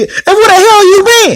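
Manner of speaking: put-on, very high-pitched, scolding hollered yell. Retelling how she greeted him in the car story: imitating her yelling. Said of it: "she's yelling at him".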